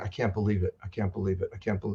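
play-acted weeping, words broken by sobs. Retelling a man crying at the newborn nursery window: imitating a crying man. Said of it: "he just starts all out crying".

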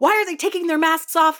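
shrill, very loud, very high screaming. Describing the man she lives with yelling at the television; imitating someone screaming. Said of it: "he is just screaming at the television".

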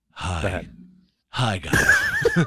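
unsettling, creepy voice, loud and swooping. Showing a jazzier way to read a hotline announcement, a speaker greets creepily. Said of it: "No, that's creepy".

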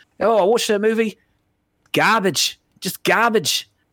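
put-on bad Australian accent. Showing off the accent for listeners to tear apart, bad australian accent. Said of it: "I'm sorry for my bad Australian accent".

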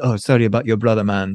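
put-on Jamaican accent. Recapping a scene for a co-host, quoting Mario in Mario's Jamaican accent. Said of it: "I loved your Jamaican accent there".

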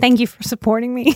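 words coming through tears, crying while talking. Thanking the listener for their support, crying while talking. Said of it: "There's some more crying".

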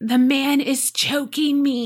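put-on deeply rasping high child's voice, slow, drawn out. Reading a young daughter's reply while she coughs: very raspy voice. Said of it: "she replies in a very raspy voice".

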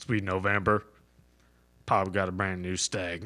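very low, very slow voice, done badly. Taking a turn doing Sling Blade: terrible Sling Blade voice. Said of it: "That was a terrible Sling Blade".

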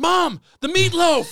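mock, very high, impassioned, passionate outcry. Quoting a favourite movie line: imitating a passionate shout. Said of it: "So much passion".

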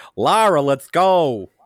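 cartoonish put-on American accent. Retelling a movie line, imitating Daniel Craig's cartoonish American accent. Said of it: "he's like a cartoon".

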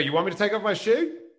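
put-on American accent. Retelling an encounter with a Secret Service agent, in character as Borat. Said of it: "I'm still in character as Borat here".

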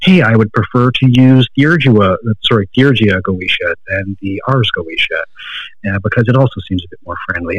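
ordinary delivery

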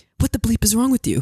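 put-on whisper. Retelling what was whispered back to him, imitating own past whisper. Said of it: "And I whispered to you".

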